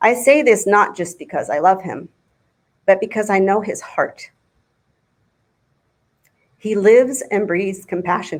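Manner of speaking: heartfelt, moved delivery with feeling rising. Speaking about someone you love, getting emotional. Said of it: "I'm getting emotional".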